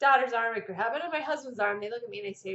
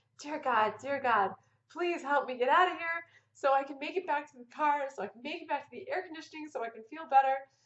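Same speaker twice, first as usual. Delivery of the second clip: pleading through laughter; 3 semitones higher than usual. Recounting being stuck holding onto the toilet paper dispenser, retelling laughing while pleading. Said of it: "And I'm laughing".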